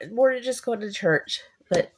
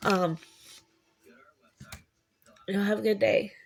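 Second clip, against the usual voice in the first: tearful voice, speaking through tears, crying. Ending a video and apologizing for crying, signing off while crying. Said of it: "I'm sorry I'm crying".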